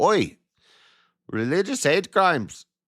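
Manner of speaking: very high put-on Indian accent slipping in. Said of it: "now I sound Indian".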